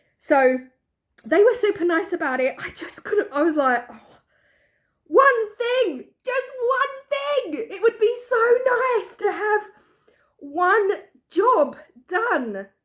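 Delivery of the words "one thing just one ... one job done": very high, cracking voice, drawn out. Speaker recounting a conversation with a booked-up crew, voice breaking. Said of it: "my voice is actually breaking at this point".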